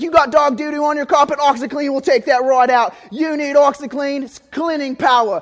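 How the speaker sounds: put-on Australian accent, loud and high-pitched. Quoting a man passionate about OxyClean, in an Australian accent. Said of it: "he's got this Australian accent".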